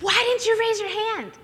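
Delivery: shrill, very high-pitched, loud screaming outburst. Telling how someone at the other table reacted after being passed over, retelling a scream. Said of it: "He screams".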